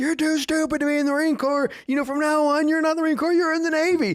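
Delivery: very high-pitched drill sergeant voice, berating. Retelling a drill sergeant berating a recruit: imitating a drill sergeant chewing someone out. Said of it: "chewing him out".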